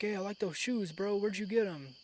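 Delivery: fast, high-pitched rapid-fire sales patter. Retelling sellers who approach him asking about his shoes, talking really fast. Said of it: "They come up to me and they're like talking really fast".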